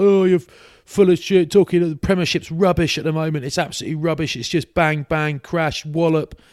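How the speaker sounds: high, heated, put-on heckling-style shout. Retelling a man at an event shouting at someone: imitating a man shouting. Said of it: "this bloke started shouting at Ben Kay".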